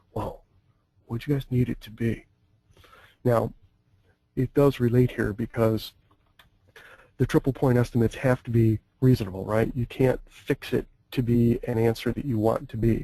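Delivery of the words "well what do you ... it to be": very quiet, hushed, under the breath. Retelling a man's answer after he closed the curtains and door, in a very quiet voice. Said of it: "in a very quiet voice he goes".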